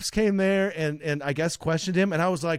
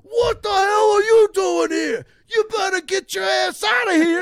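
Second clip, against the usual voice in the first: terrible put-on New York accent, very high and loud; 7 dB louder than usual. Retelling an old guy from new york confronting a visitor, terrible new york accent. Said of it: "that's a terrible New York accent from me".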